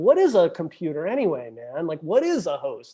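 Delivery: put-on dazed, strung-out, swooping, spaced-out musing. Acting out a thought while strung out on a vision: imitating a strung-out thinker. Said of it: "when you're strung out on a vision like this".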